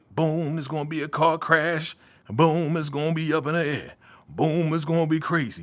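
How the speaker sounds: rhythmic preacher cadence building beat by beat. Predicting events from a show's trailer, in preacher-like cadence. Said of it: "I sound like a preacher".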